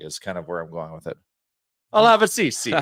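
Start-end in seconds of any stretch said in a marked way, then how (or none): 1.9-2.7 put-on Italian accent, pitched a bit high. Ordering coffee while guessing a country, in an italian accent. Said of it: "Italian accent on that?".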